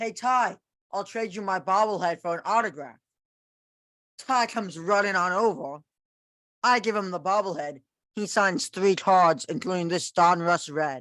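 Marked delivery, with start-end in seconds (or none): 0.0-3.0 put-on, raised, carrying call-out. Telling of going back to the field and calling to a player, retelling calling out. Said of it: "I call out to Ty".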